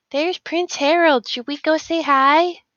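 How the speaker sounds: in-character whisper. Voicing a character at a fancy party, whispering to the others. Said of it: "I whisper to the others and I say".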